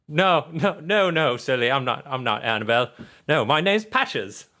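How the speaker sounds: high teddy bear voice. Voicing a rundown teddy bear who wakes a player: Patches teddy bear voice. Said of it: "He's like".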